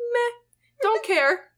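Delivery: careless, very high, dismissive, indifferent meh. Retelling how the angel Michael shrugs at Trinity's question: imitating indifference. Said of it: "Indifference sounds like a human emotion".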